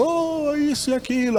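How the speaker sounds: high-pitched mock shouting.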